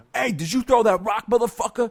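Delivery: very high, loud-toned, high-pitched yell. Recalling a man confronting them at fourteen, the speaker retells a loud shout. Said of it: "he said that to me in a loud tone".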